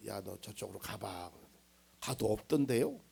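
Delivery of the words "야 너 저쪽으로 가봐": very hushed, low, quiet half-whisper. A pastor retells half-whispering a hint to a child in a treasure hunt: retelling a half-whisper. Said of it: "나중엔 귓속말로 해줬어요".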